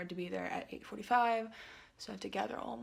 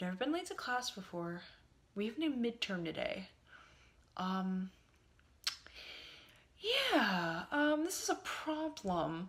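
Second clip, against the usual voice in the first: normal talking voice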